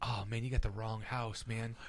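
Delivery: hushed, soft half-whisper, close to the ear. Retelling words said into the ear of someone who came into the house: retelling a half-whisper. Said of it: "you whispering it while you're manhandling him".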